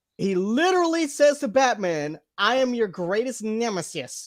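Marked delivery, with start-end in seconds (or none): 2.4-4.3 villainous comic-style delivery. Imitating how a villain talks to Batman: Lord Deathman voice. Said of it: "he sounds like this".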